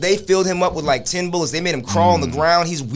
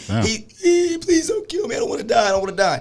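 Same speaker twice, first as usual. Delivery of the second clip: put-on weeping, higher and slower; 6 semitones higher than usual. Describing a video of a man crawling toward police, imitating someone weeping. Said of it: "He's weeping".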